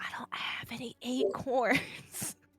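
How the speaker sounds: hushed, soft whispered aside. Whispering in character to Anala during the game: whispering in character. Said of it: "I whisper I whisper to Anala".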